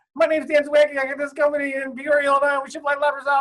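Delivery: very high-pitched, rapid-fire, mile-a-minute speech. Retelling own first phone call, imitating talking a mile a minute. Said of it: "talking, like, a mile a minute".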